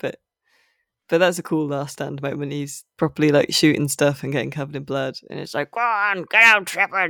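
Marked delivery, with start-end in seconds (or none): 5.7-7.1 put-on high, slow frog character voice. Quoting a character's last-stand line: frog voice. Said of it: "in his frog voice".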